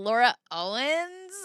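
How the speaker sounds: surname said with rising, question-like tune. Imitating how she says her own name: imitating her name said as a question. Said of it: "with the question at the end".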